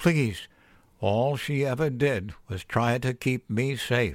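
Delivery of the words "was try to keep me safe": ordinary delivery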